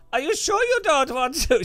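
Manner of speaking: shrill, very loud, high put-on Swedish accent. Quoting a woman's repeated offers to the speaker, in a Swedish accent. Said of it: "It was like Swedish accent".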